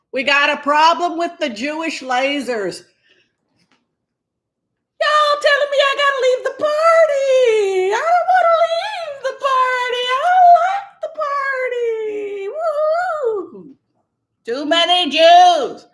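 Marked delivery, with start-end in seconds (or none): 5.0-15.7 very high, whooping, swooping sing-song, drawn out. Doing an impersonation, then asking how it was: Marjorie Taylor Greene impersonation. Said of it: "This is my Marjorie Taylor Greene impersonation".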